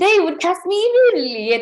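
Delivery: very high, loud, put-on British accent. Saying she'd get cast in Bridgerton, in a British accent. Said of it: "Doesn't this sound realistic?".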